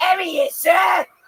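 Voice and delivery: put-on Australian accent, pitched very high. Asked whether they have those in Australia, answering in an Australian accent. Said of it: "That's my Australian accent".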